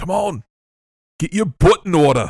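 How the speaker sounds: put-on loud, high-pitched, barked Cockney accent. Recapping a scene, the speaker voices Sharon urging others to run: Cockney Sharon voice. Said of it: "This is the Cockney British version".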